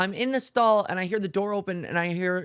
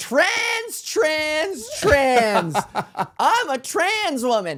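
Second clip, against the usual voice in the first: loud swooping yelling; 8 semitones higher, 4 dB louder than usual. Speaker recounting confronting a man in a bar who hit on her: retelling a yell. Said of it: "And then I started yelling".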